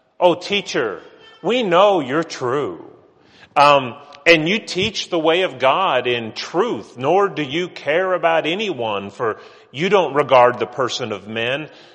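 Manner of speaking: play-acted loud, sarcastic, buttering-up tone. Acting out the questioners setting up Jesus: acting out sarcastic flattery. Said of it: "That's sarcasm. Can't you hear the setup?".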